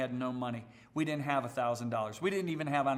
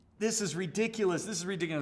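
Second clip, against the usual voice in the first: put-on screaming, higher; 6 semitones higher than usual. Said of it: "my head is screaming at me".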